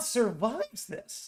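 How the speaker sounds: voice breaking mid-phrase. Speaker laying out a theory to listeners, voice cracking. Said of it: "my voice cracked".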